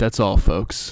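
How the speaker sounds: deep man's voice. Retelling a cartoon's last line, doing Jerry: very deep voice. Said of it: "It's a very deep".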